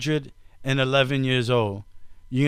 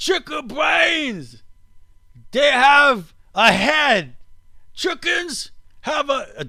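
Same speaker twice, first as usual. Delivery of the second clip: put-on Australian accent, much higher, slower; 12 semitones higher, 4 dB louder than usual. Speaker shows Dad how a guy from Australia sounds to him, put-on Australian accent. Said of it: "Do I sound like an Australian?".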